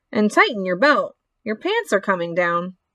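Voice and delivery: plain reading voice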